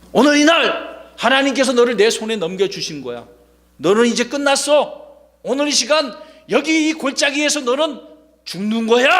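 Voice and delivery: put-on bold voice. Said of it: "다윗이 아주 용기 있게".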